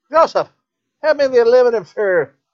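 put-on high Irish grandmother accent. Quoting a grandmother's request, in an Irish grandmother accent. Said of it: "That's my go-to Irish because half my family's Irish".

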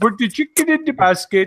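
put-on mock Swedish accent voice. Joking about looking like the Swedish Chef: Swedish Chef voice. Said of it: "Making fun of Swedish people like that".

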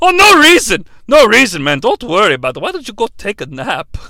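put-on crazy grandpa voice. In a parody scene, Uncle Iroh answers Zuko; crazy grandpa voice as Uncle Iroh. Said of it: "the voice that I used for the crazy grandpa".

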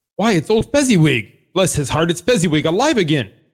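put-on Irish-accented character voice. Voicing Scrooge in a group reading, after being told to go back to it: Scrooge in an Irish accent. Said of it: "Go back to your Irish accent".

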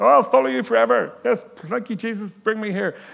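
shrill, rough and loud delivery. Mimicking a churchgoer promising to follow Jesus forever: Kermit the Frog voice. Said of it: "I don't know who that vo-, voice was. Kermit the Frog".

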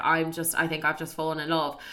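ordinary delivery

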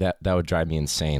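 ordinary delivery

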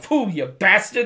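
put-on loud, high, angry old man voice spat out. Recounting a scene, imitating Patsy's angry spit: imitating Patsy's angry spit. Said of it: "angry old Italian man thing".

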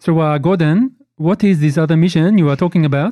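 put-on hint of French accent. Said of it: "it's getting very French there".

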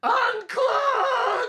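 shrill, screeching, very high and loud yell. Playing a character yelling at the little computer: yelling. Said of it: "you wanna yell at it?".

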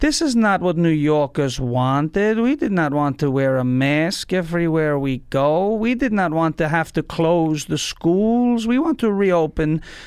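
very slow cadence, every word stretched out. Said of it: "He's so slow".

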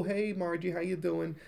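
Dakotan accent. Doing a greeting, put on an attempted Dakotan accent. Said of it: "Dakotan accent".

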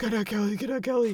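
mock excited gushing voice. Retelling how they gush every week about the movie: imitating own excited gushing. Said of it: "And every week I'm like".

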